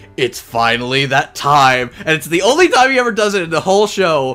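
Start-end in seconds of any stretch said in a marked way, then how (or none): 0.2-1.9 put-on voice, stern and sexy. Retelling the character's big moment in the last episode: stern, sexy David Matranga voice. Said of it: "stern, sexy Matranga voice".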